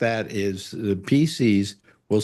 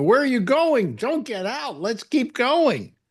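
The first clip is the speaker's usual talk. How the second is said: mock screaming, very high; 13 semitones higher than usual. Retelling what she screamed after the speaker stopped the car, retelling a scream. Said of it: "She was screaming at me".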